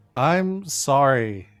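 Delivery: insincere, unconvincing, not genuine-sounding tone. Apologizing after being told to be nice, with an insincere apology. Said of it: "didn't sound super genuine".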